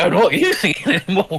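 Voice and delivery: laughing while speaking.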